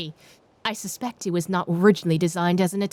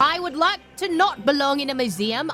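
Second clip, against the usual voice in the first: put-on British accent, pitched higher; 5 semitones higher than usual. Speaking in character while the group picks its next move, in a British accent. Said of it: "I'm stuck in a British accent now".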